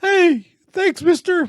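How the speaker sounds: put-on very high, loud, breaking young kid voice. Imitating a kid just finding their voice: imitating a kid whose voice is breaking. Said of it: "like they're just finding their voice".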